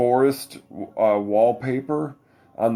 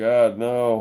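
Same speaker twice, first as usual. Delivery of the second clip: plain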